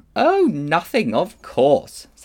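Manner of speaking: drawn-out, swooping sarcasm. Polly answers Diggory, who asks what he has done, sarcastic. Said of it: "said Polly sarcastically".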